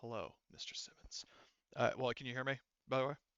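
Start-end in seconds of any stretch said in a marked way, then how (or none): 0.0-1.2 very quiet, low, calm, menacing, sinister hush. Acting out a male voice reaching out to Simmons, in a low, calm, sinister voice. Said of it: "very low, calm but kind of sinister voice".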